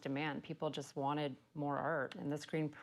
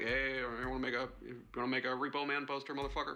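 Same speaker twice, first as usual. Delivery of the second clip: put-on, imitated mumbling voice. Describing the late-night calls Rob makes, mumbling like Rob. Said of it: "Mumbles a few sentences out like".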